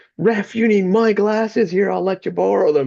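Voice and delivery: very high, shrill scream. Retelling how an assistant coach heckled the referee: imitating someone screaming at a ref. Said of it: "she started screaming at the ref".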